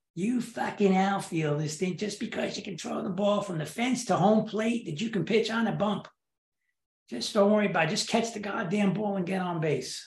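put-on Boston-accented speech. Retelling the skipper's reply to his offer to pitch, boston accent. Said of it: "with that Boston accent".

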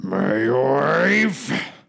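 high, rough, rasping creaky voice. Answering a request to say the words as Rupert: Rupert from Survivor impression. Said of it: "Can you do my wife as, as, um, Rupert from Survivor?".

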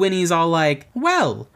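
usual speaking voice

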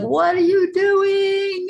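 acted-out slow, very high shriek, "doing" stretched out. Retelling watching her sneak out for drugs: imitating a scream. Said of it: "the whole time I'm screaming".

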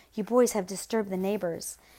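plain reading voice

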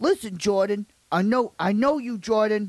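gangster tough-guy voice. Imitating a tough guy from school addressing Jordan, talking like a hard-ass. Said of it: "he literally talked like a hard ass".

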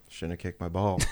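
mock quiet low mutter. Retelling what someone said under his breath. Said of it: "Under his breath".

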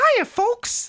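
very high, loud, squeaky cartoon voice. Asked to open the episode with one, host does a Mickey Mouse impression. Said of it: "Can you do a Mickey Mouse impression".

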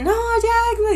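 mock very high, stretched-out screaming cry. Retelling a video game scene where Jack loses his arms, imitating Sonya screaming. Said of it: "y se pone a gritar".

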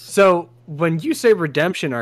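voice cracking and breaking. Asking another speaker a question during a group vote, voice cracking. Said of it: "that was a nice voice crack".

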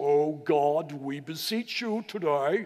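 very slow, drawn-out, theatrical, showy stage-prayer voice. Imitating people beginning to pray aloud, in a put-on special stage voice. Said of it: "with that special stage voice".

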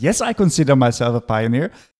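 English spoken with a put-on German accent. Retelling how a man answered an interviewer's question: German accent. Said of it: "met een heel heerlijk Duits accent".

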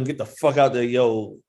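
normal talking voice

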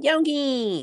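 very high cartoon voice with a stretched-out word. Retrying a Yogi cartoon bit, calling out to Yogi in a Boo Boo voice. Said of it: "that's better".

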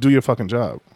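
put-on condescending tone. Retelling how the remark sounded: imitating a condescending tone. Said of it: "he said it in a very condescending way".

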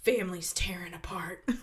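soft, breathless mock whisper. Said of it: "and then Forrest is like".

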